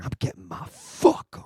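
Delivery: slow, drawn-out whisper under the breath. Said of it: "Oh, you would whisper".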